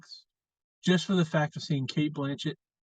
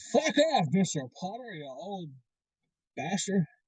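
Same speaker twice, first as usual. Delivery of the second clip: cartoon voice with pitch swooping wildly all over; 3 semitones higher than usual. Showing a Grinch impression he has been working on: Jim Carrey's Grinch impression. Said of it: "Jim Carrey's The Grinch impression".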